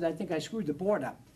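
normal talking voice

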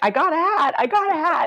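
very high, stretched-out, drawn-out yell. Speaker retells phoning their parents in the middle of the night, retelling a yell. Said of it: "I just start yelling".

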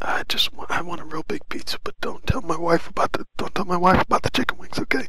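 whispering. Ordering pizza over the phone, whispered.

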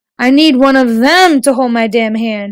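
plain

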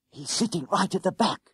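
fast, high-pitched whisper. A narrator reads a crouching character reporting to his companion: whispered. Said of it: "he reported in a whisper".

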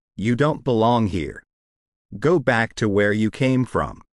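usual speaking voice

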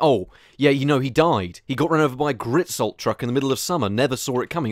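ordinary talk

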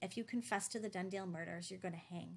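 plain reading voice

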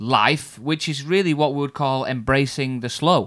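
ordinary delivery

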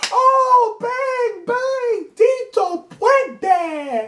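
very high holler, long and drawn out. Retelling a grandmother's cheer after a made shot: imitating grandmother yelling. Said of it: "my grandmother's in the back yelling".

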